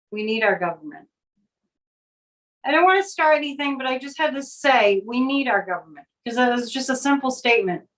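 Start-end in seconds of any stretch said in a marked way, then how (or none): 0.1-1.0 imitated mutter under breath, much lower pitch. Recalling a reply on a sunday walk, retelling a mutter under breath. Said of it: "kind of under my breath".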